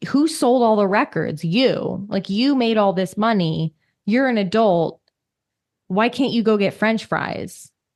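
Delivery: grave, really serious, earnest no-nonsense delivery. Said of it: "she gets really serious and she's like".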